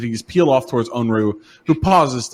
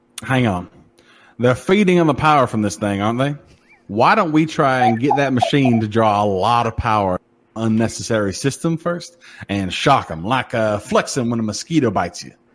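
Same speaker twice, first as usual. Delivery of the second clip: put-on Southern drawl accent. Voicing a character who suggests shocking the creatures: southern drawl. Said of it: "I like your southern drawl".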